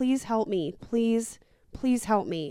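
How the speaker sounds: tearful, crying, pleading voice. Retelling a movie scene of a man begging for help, imitating someone crying. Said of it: "he's like crying and he's like".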